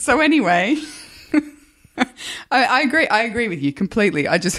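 high voice, giggling and laughing through the words. Agreeing with the other speaker's answer, laughing while talking. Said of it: "Why are you laughing at me then?".

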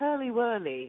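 put-on English accent and pronunciation. Contrasting how english people say a chocolate bar name: imitating english accent. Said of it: "English people are like".

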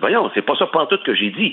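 carried-away, worked-up, heated, flaring tone. Retelling a phone call with a journalist, reenacting getting worked up. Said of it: "je m'emporte un peu".

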